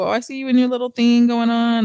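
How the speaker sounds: acted-out snide, backhanded, sneak-dissing tone. Imitating people who sneak diss others: imitating a sneak-dissing hater. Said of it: "them sneak dissing hater ass people".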